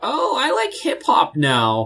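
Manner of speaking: very high, swooping mocking voice. Mocking a type of fan, the NPR tote-bag wearing crowd: mocking an NPR tote-bag wearer. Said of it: "the, the N P R tote bag wearing".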